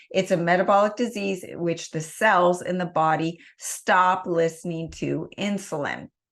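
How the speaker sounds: ordinary delivery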